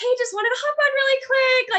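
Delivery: wavering, very high-pitched, shaky voice. Describing talking to your phone when filming yourself, imitating a high, shaky voice. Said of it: "you like kind of get all high pitchy, your voice gets shaky".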